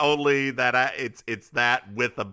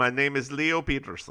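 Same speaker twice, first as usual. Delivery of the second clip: heavily laid-on put-on Russian accent; 4 dB quieter than usual. Retelling a story to listeners, speaking as the character Leo Peterson: Leo Peterson accent. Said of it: "there's gonna be a lot of that accent".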